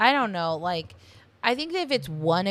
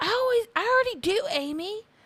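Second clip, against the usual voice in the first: very high, shrill yell, full of attitude. Retelling a scene where one sister snaps at the other: imitating Tammy yelling. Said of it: "And then Tammy yells".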